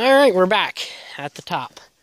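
winded, breathless, panting voice. Back at the top after heading up for a view, speaking out of breath. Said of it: "And out of breath".

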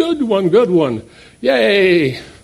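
acted excited whooping, high, drawn-out, yay stretched. Retelling how young golfers cheered a great shot: imitating young guys screaming. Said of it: "they all started screaming".

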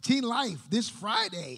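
voice cracking up high, pitch breaking mid-phrase. Reading out an event announcement, voice cracking. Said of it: "My voice just cracked".

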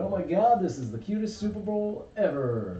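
normal talking voice

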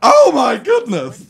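very high, very loud, shrill exclamation. Showing what the Mad Hatter actor sounds like: imitating Ed Wynn. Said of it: "He's like".

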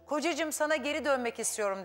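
ordinary talk

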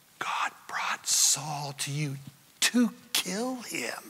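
slow, unvoiced whispering.

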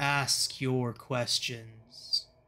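deep, resonant, massive thundering boom. Voicing a being of light answering a player: massive booming voice. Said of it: "a massive booming voice respond to you".

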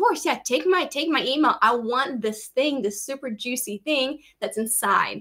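ordinary talk

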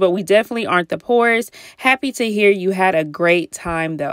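normal talking voice

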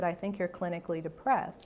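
plain

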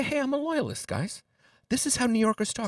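put-on British accent. Imitating how a loyalist in new york talked back then: slight british twang. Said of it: "with like a little British twang".

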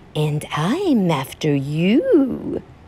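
swooping hissing cat voice, drawn-out "you". Narrator reading a story, the cat answering the bird: hissing cat. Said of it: "The cat looked up at the bird and hissed".

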